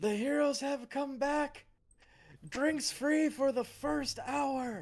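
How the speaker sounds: shrill high-pitched yell. As game master, voicing a character ringing the tavern bell; yelling out. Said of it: "And he starts yelling out".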